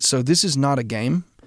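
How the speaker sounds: plain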